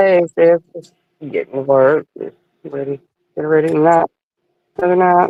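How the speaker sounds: weary, worn-out, low, tired voice. Greeting a caller while just getting to work, tired voice. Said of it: "You sound tired".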